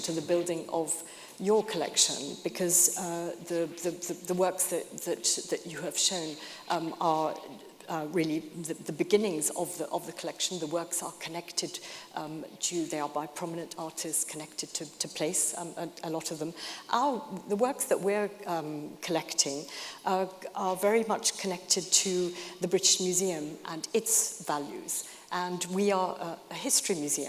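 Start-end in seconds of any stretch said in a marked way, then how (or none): 0.0-2.4 your gently stressed with falling pitch. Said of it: "to the building of our collection".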